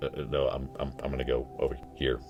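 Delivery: very quiet, low, hushed, rattled, freaked-out stammering. Retelling how a coworker answered in a dark room: imitating a freaked-out reply. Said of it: "look, freaked out, and she's like".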